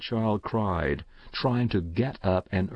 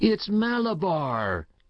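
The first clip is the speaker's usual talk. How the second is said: very high, eerie, powerful full-throated scream; 10 semitones higher than usual. Narrator reading a story, Paul on his wooden horse answering the woman with a powerful, strange scream. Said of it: "he screamed in a powerful, strange voice".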